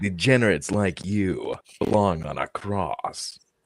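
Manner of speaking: deep put-on voice. Doing a quoted line after being told their voice is deep enough, deep put-on voice. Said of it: "you got a deep enough voice to do it".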